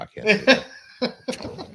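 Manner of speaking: high, giggly, laughing mock squeak. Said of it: "How about A O A goes".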